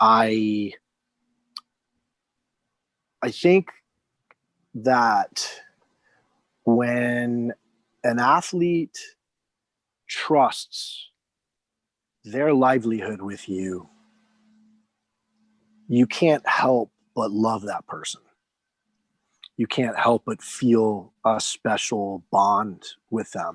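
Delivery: emotional, choked voice. Speaker admits mid-conversation to getting choked up, choked up. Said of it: "I'm actually getting choked up about it".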